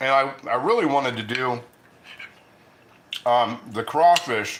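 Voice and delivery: speaking with mouth full of food. Talking about meal plans while eating, talking with mouth full. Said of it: "talking with my mouth open or my mouth full".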